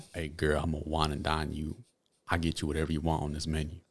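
hushed low voice. Speaker retelling what he said to a girl at the food register: lowered voice. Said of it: "let me lower my voice".

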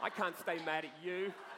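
laughing, can't stay mad.

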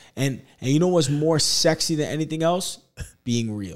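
ordinary delivery

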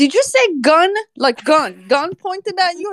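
high, disbelieving, incredulous tone. Retelling dispatch phoning the speaker after a call on air, mock-incredulous dispatch. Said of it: "they couldn't believe it".

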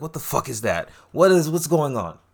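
panicked, confused, frantic blurted outburst. Retelling a character's reaction, imitating someone freaking out. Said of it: "He's freaking out".

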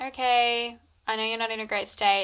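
ordinary delivery

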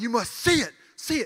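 mock very slow, deliberate, drawn-out proclaiming tone. Retelling how a man spoke over the whole crowd, said very loudly. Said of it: "he said it so loud".

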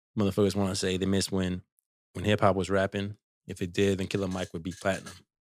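plain

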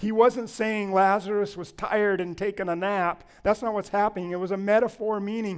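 ordinary delivery

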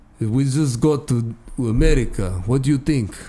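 put-on Russian-accented voice. Improvising as Russians just arrived in America: Russian accent. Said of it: "talk to you for at least a couple minutes in a Russian accent".

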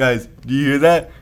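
ordinary delivery

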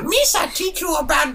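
very high, goblin-like voice. Trying to do Jar Jar giving the sex talk: attempted Jar Jar Binks voice. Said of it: "like a goblin".

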